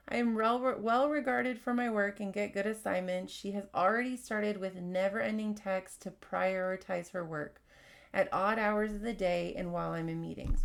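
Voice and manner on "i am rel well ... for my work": plain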